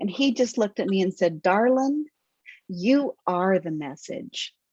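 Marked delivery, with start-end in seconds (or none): 1.4-4.5 put-on male southern drawl, much slower. Retelling what Jerry answered them, imitating Jerry's southern drawl. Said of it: "they had that southern twang or that southern drawl".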